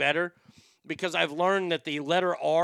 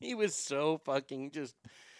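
usual speaking voice

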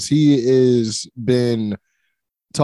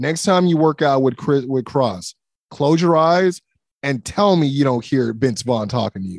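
normal talking voice

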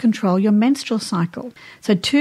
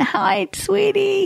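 put-on old woman voice, much higher; 10 semitones higher than usual. Describing how one's own voice has changed over the years, old woman voice. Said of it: "You know those old women like that really like".

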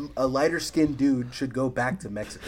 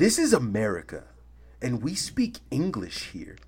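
mock irate scolding tone, angry outburst with swooping pitch. Retelling what a red-faced man said: imitating an angry man. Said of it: "turns beet red".

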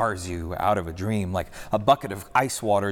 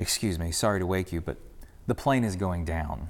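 put-on even, steady, calm, polite tone; 3 dB quieter than usual. Retelling how grandmother gently woke the woman beside her, retelling her steady voice. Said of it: "in a steady voice she said".

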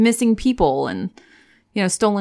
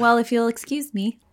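ordinary talk, nothing marked

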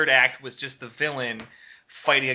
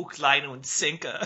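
put-on German accent. Quoting a favorite movie line: Jeremy Irons' German accent. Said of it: "Jeremy Irons in, in, in, uh, Die Hard three saying".

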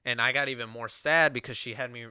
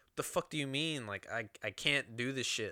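put-on frustrated, upset, angry, under the breath; 6 dB quieter than usual. Retelling reacting to a calm woman saying they'll be fine, retelling getting angry. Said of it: "I'm getting more angry and more upset".

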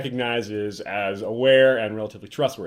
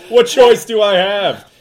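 put-on mock-lamenting voice, higher and louder; 9 semitones higher, 9 dB louder than usual. Retelling a ruler's excuse for killing dragons: imitating Hizdar's fake lament. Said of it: "He's like".

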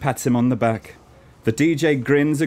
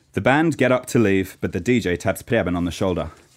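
ordinary delivery

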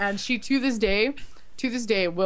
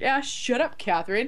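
mock cheeky, sassy, dismissive tone; 4 semitones higher than usual. Retelling a car mishap, the speaker quotes sassing Catherine: retelling a sassy remark. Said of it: "I was being sassy to her".

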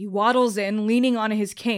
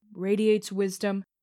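ordinary delivery

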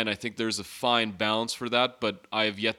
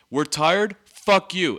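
loud, pitched-up yelled outburst; 7 semitones higher, 6 dB louder than usual. Retelling how he yelled at every player, imitating someone yelling. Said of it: "he started yelling at them".

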